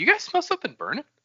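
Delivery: very high, utterly clueless, oblivious tone. Showing an impression of an oblivious Ellen walking past a burning building: Ellen impression. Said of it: "this is my impression of, of, uh, Ellen".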